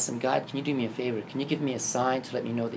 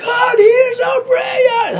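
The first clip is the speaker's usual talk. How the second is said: acted-out crying and sobbing, much higher, slower; 17 dB louder than usual. Retelling running through the streets after a sign from God, reenacting crying and sobbing. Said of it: "I'm like crying, sobbing".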